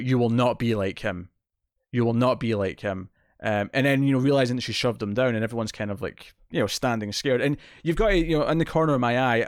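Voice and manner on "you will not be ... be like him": usual speaking voice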